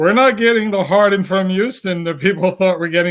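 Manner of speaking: thick put-on Cambodian accent. Retelling a player's quote about Harden: Joel Embiid accent impression. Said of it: "in that big Cambodian accent that he had".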